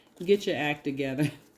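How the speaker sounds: ordinary delivery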